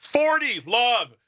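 high-pitched mock yell. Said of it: "just start sh-, yelling".

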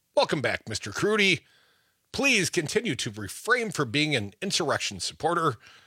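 ordinary delivery

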